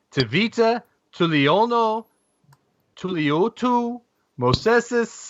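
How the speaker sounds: Spanish accent, spoken very slowly. Reading out a drafted player's long Samoan name: Spanish accent. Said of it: "Saying the Samoan name with a Spanish accent".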